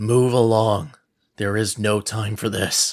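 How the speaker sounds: slow, growled, menacing tone. Voicing a guard who orders a couple away: growling guard. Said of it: "places his hand on his sword and growls".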